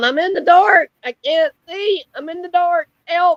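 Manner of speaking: play-acted, slow, high, drawn-out pleading yell. Retelling what someone yelled through the phone: imitating someone yelling. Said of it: "She was yelling".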